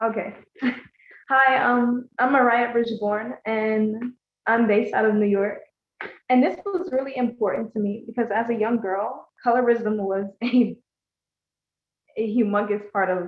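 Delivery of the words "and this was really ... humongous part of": emotional, overcome, struggling through the words. Writer introducing her piece to a group, emotional. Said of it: "I'm sorry, guys, I'm emotional".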